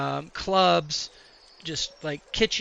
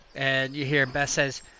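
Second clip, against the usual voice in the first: ordinary talk, nothing marked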